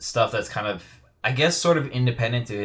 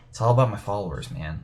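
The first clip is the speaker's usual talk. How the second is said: put-on stoned movie-villain voice. Mimicking a movie actor who started his own cult, in a stoned Heath Ledger Joker voice. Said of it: "he sounds like a stoned".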